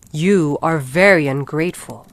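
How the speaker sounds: loud, dreadful, frightening monster voice. Narrator voicing the beast speaking to the merchant, in a terrible voice. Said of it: "said the beast to him in a terrible voice".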